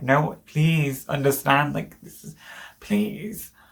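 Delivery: tearful, begging through sobs. Retelling begging at the desk after a doctor left: retelling a tearful plea. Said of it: "I started crying on the desk and I'm like".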